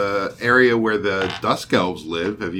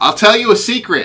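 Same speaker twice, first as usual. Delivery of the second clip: very loud, shrill, high-pitched booming yell; 13 semitones higher, 8 dB louder than usual. Told to speak up, offering to tell a secret, speaking very loudly. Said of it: "you're so loud".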